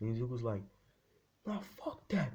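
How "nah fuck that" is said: very high, distorted, warped voice pushed way up. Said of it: "with a distorted ass voice".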